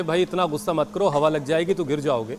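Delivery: ordinary delivery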